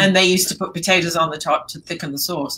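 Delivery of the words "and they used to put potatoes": ordinary delivery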